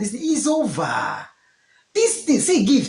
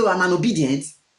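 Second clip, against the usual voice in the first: usual speaking voice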